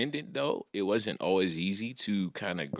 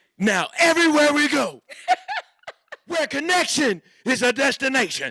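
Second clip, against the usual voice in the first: furious, very loud, high, shrill yell; 10 dB louder than usual. Reading a line after the card says Angry Dad: angry dad voice. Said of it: "Angry Dad".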